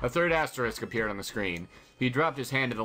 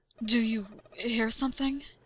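female voice, pitched very high; 12 semitones higher than usual. The dancer asks the others pulling at a stuck door, in a quiet voice. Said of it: "Her voice was quiet".

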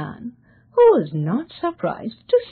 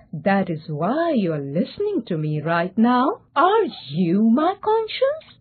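plain reading voice

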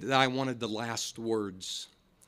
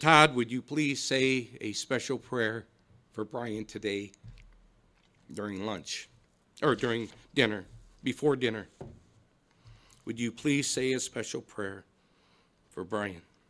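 play-acted trembling, quivering voice close to tears. Retelling his dad's request to him at Thanksgiving, imitating a quivering voice. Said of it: "with tears in his eyes and a quivering voice".

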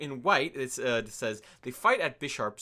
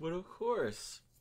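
soft, drowsy, sleepy voice; 3 semitones higher, 6 dB quieter than usual. Asked to read a Pokedex entry aloud, agreeing in a sleepy voice. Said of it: "You sounded kind of sleepy there".

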